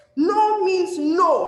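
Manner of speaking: high, loud, slow shout. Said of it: "Practice how you shout no".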